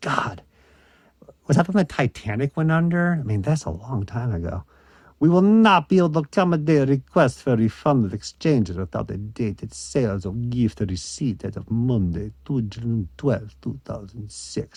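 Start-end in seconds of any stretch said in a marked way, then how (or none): 5.2-14.8 put-on Eastern European accent. Reading a Toys R Us return policy leaflet aloud, in an Eastern European accent. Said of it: "the Eastern European accent kicks in".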